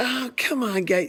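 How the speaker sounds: very high-pitched, annoyed, dismissive voice. Retelling an annoyed man's reply with younger kids flocked around him, imitating a high-pitched voice. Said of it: "his voice is kind of kind of high pitched".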